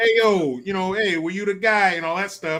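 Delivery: put-on, very bad New York Italian accent. Retelling a man confronting a guy over a puppy, in the worst new york italian accent. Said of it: "in the worst New York Italian accent I've ever heard".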